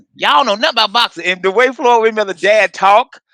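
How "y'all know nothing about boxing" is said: put-on country Southern voice, pitched higher. Retelling a comedy skit, imitating Floyd Mayweather Senior. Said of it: "did a skit of Floyd Mayweather, Mayweather Senior".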